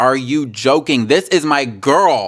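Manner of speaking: slow, stretched-out, drawn-out screaming. Retelling own reaction to a game scene, imitating own screaming. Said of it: "The way I was screaming and running around the room like".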